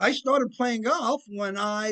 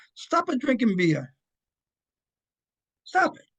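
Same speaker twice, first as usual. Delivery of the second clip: put-on Italian accent, laid on; 2 semitones higher, 3 dB louder than usual. Recounting a lunch with a customer, the speaker quotes a man in an Italian accent. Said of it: "he had an Italian accent".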